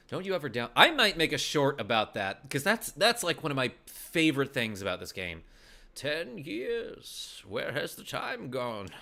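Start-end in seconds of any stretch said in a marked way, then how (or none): 5.9-8.9 put-on soft, very slow, seventy-year-old man voice. Playing a game, the speaker voices characters now aged seventy, in an elderly voice. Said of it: "That's why I'm doing that voice".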